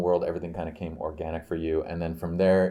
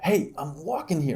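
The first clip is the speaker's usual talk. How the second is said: put-on pitched-up, typical New York accent; 10 semitones higher than usual. Retelling what a woman with a stroller said while walking, typical new york accent. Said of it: "like typical New York accent".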